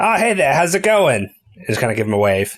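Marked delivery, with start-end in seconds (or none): 0.0-1.3 loud, pitched-up voice called out across the room. A player speaks in character, hoping everyone in the other room hears; rather loudly. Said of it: "I'm going to say rather loudly".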